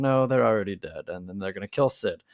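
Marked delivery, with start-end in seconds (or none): none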